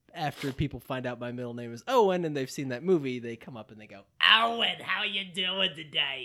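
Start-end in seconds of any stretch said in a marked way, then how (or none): 4.2-6.3 shrill, drawn-out, high, loud cartoon voice. Retelling how people greet him once they learn his middle name, in a SpongeBob chocolate lady voice. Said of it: "That sounds like the chocolate lady from SpongeBob SquarePants".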